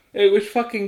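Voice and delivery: very loud, high words stretched by a yawn. Commenting on a movie with another speaker, yawning while talking. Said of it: "I'm yawning in the middle of our commentary".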